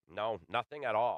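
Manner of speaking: mock, sarcastic and dismissive tone. Retelling how he answered a question about a coach, retelling a sarcastic dismissal. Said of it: "very sarcastically".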